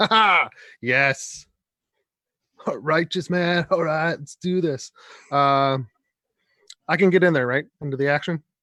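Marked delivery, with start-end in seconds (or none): 0.0-4.9 chuckling through the words in character voice. Acting a character running into a fight: laughing while speaking in character. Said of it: "laughing, like".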